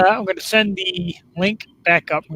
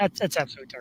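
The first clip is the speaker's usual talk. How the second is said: plain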